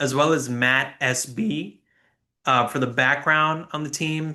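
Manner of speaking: cracked voice, breaking mid-sentence. Thanking sources for the team stats and background, with the voice cracking. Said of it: "ignore the voice crack".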